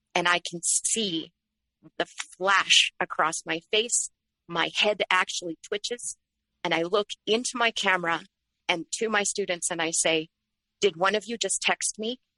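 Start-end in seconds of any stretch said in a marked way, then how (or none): 10.9-12.2 jumpy, panicky, panicked delivery. Retelling asking students on a lecture call about a text: imitating own panicked question. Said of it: "there's panic in my voice".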